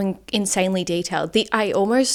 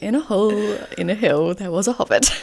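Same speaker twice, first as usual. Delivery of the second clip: put-on soft, old, wise wizard narrator voice. Imitating Gandalf narrating the opening line of a book: soft old wise narrator voice. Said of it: "It's like the soft".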